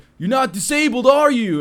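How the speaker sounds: mock yelling, pitched very high and shrill. A guy at the back of the bus yells about the seats, imitating a guy yelling. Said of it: "this guy from the back of the bus yells at me".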